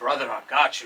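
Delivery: put-on deep Italian accent. Retelling Ray's reply about getting restaurant volunteers, imitating Ray's deep Italian voice. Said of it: "with his deep Italian".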